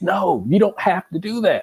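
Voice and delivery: high-pitched screaming yell. Comparing himself to a football fan watching his team lose: imitating screaming at the TV. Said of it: "screaming at the T V like".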